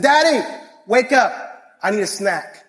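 put-on child voice. Retelling how the daughter wakes him each morning: imitating his daughter. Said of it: "She says".

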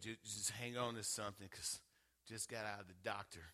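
put-on sorrowful hush, very soft and sad. Retelling a phone call with a good report: imitating Sister Mary's sad voice. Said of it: "had me in that sad voice".

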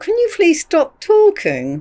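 spoken in a very high voice. Retelling asking a chattering concert neighbour to stop: retelling words said through a smile. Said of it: "through my smile went".

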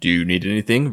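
flat, machine-like delivery. Retelling a husband calling his wife to ask if she needs anything, robotically. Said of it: "very robotically".

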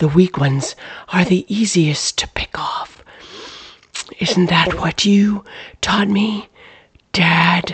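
menacing, disembodied-sounding stage whisper. In a story read aloud, a disembodied voice speaks to Clyde in the barn, whisper. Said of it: "A disembodied voice swooped forward from out of the inky void, pressing Clyde back against the wall of the barn. It came from all directions, and yet it was only a whisper. / [name]? / and yet it was".

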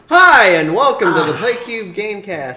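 far too loud, high, overblown, overdone delivery. Opening the show with a greeting: too loud. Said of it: "That was a bit too loud".

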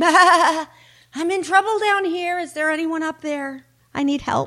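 high, yelled calling out. Narrator telling a story of a sheep dangling from a cliff, yelling for help. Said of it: "the sheep tried again".

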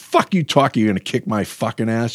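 mock confrontational, mildly heated half-yell. Recounting confronting a man about his sister; retelling his own yelling. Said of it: "And I started yelling".

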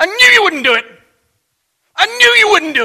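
acted, very high, very loud snarl through clenched teeth. Speaker retells a man who slammed the desk and pointed in their face: retelling words through gritted teeth. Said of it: "through gritted teeth".

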